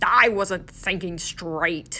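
mumbled, indistinct delivery. Narrator reading Lem's reply to Quirrell, mumbled. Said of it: "he mumbled".

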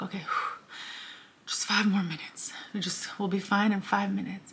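relieved, breathy sigh whispered under the breath. Retelling the first inner voice as the flight lands: imitating a relieved sigh. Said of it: "sighed of relief".

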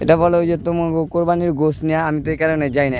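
ordinary talk, nothing marked

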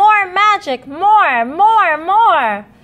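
very high, loud, eager, excited cry. Cats beg their friend with a magic wand for more, crying out excitedly. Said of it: "the cats cried excitedly".

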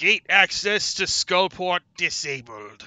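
very loud, booming, high-pitched mystical announcer voice. Game narrator voices what speaks after a player presses a button; magical voice. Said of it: "a magical voice fills the room and says".

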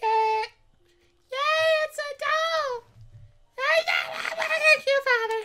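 voice pitched as high as it goes. Reading a character's dialogue aloud: high-pitched voice. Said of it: "I can't make my voice go any higher".

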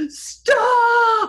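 loud, high-pitched cry.

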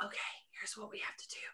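fast, quick, hushed whisper. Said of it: "So as I'm whispering".

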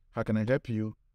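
usual speaking voice

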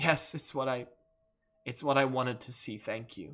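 laughing through tears, smiling while tearful. Narrating a scene, a character answers a question, laughing through tears. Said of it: "laughs in spite of herself, like, through her tears".

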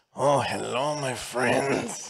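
drawn out slowly with pitch swooping around. Game master voicing the informant greeting the party, in a bad Peter Lorre impression. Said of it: "It's my bad Peter Lorre impression".

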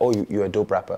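ordinary talk

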